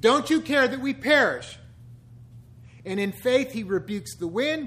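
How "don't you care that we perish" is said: mock reproachful, accusing, raised voice. Quoting a bible passage to listeners, acting out an accusatory tone. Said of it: "that accusatory tone we all take with God".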